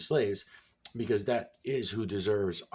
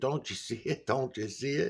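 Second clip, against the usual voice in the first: mild, insistent yelling; 5 semitones higher than usual. Retelling own past reaction while watching videos: imitating own past yelling. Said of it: "I'm yelling in the background".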